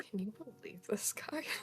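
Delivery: quiet whisper. Voicing a character who whispers to a companion: whispering. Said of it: "Reyna whispers to Bean".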